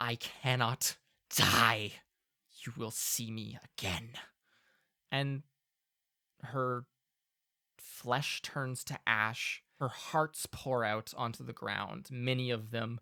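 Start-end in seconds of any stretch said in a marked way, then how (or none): 0.0-4.1 rattly, horrible-sounding voice. She speaks out loud instead of into your head, in a rattling voice. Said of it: "she says out loud in kind of a rattling voice".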